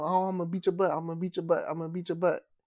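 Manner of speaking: normal talking voice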